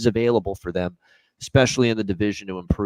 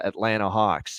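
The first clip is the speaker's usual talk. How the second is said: ordinary delivery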